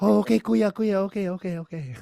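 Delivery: mock Filipino accent, woman's voice, very high, squeaky.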